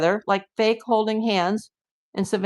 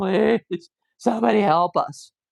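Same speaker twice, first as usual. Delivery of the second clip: slow, drawn-out pleading tone. Acting out how someone should beg news cameras: acting out begging. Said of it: "You should be begging the cameras".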